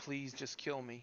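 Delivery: very soft, quiet, hushed whimpering voice. A game narrator voices someone heard on a recording, in a very soft, whimpering voice. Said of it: "in a very soft, whimpering voice say".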